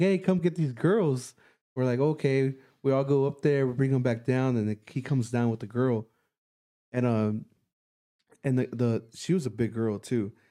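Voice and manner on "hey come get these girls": called out lightly. A boy at a window calls to the group outside, retelling a yell. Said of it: "and yells at us".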